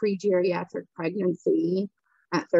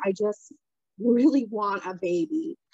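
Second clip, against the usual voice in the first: slow, put-on tearful voice broken by sobs; 2 semitones higher than usual. Retelling own words to the doctor while sobbing: imitating own sobbing. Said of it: "I'm just, like, sobbing".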